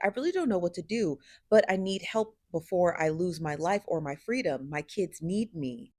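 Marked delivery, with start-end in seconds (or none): none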